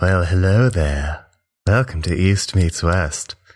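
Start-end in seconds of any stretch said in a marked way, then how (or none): 0.0-1.2 vintage horror film voice. Greeting listeners at the start: sounding like Vincent Price. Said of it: "Is that Vincent Price?".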